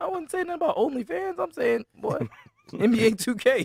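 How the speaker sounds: extra high-pitched cartoon-mouse squeak. A speaker protests he said nothing about OnlyFans, extra high-pitched voice. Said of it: "why did his voice get extra high pitched like Mickey Mouse?".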